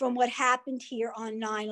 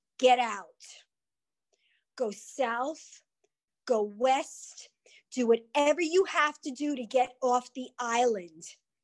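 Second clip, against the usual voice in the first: very stern, hard, no-nonsense voice. Recalling what she told her husband after the plane struck: retelling a very stern order. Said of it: "in a very, very stern tone".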